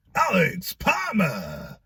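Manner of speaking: big, swooping TV announcer voiceover voice. Counting down a numbered list in a video, announcing a name in X Factor voiceover voice. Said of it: "like the voiceover from the X Factor".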